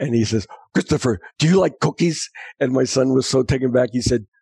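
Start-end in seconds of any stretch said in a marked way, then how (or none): 0.7-2.3 put-on puppet monster voice. Retelling a puppet greeting a little boy: Cookie Monster voice. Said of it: "he came out with the Cookie Monster".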